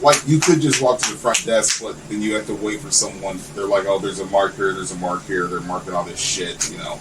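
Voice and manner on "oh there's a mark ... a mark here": ordinary talk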